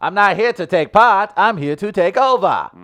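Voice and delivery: very loud, high, put-on Irish accent. Showing an accent to others who ask whether it is welsh, put-on irish accent. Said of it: "Irish accent".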